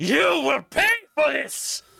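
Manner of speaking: raging, furious witch voice, very high, shrill, swooping. Voicing Morgantha as players flee her burning windmill: angry Morgantha the night hag. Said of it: "what is she so mad about?".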